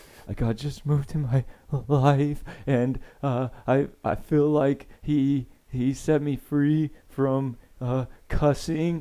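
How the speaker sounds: put-on crying voice. Retelling giving testimony on the mic in junior high, acting out crying testimony. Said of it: "I get up and I'm like crying".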